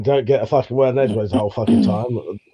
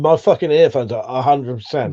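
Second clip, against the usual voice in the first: usual speaking voice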